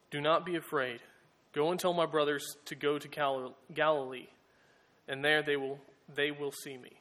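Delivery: plain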